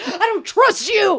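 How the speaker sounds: very high-pitched, slow, drawn-out shriek. Retelling a friend screaming at a smart speaker: imitating someone screaming. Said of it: "started screaming at it".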